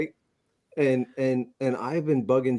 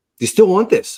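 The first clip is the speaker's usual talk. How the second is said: mock frantic, frenzied, very loud and high; 7 semitones higher, 8 dB louder than usual. Telling how a seller named John called him up, imitating frantic John. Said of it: "He's like frantic".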